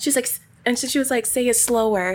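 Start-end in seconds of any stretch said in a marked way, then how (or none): none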